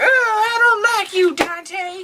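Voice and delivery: put-on very high, crotchety, grumpy granny voice. Host mocks his co-host for acting like a grumpy granny, imitating Zach's grumpy granny. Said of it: "Zach wants to be a grumpy granny".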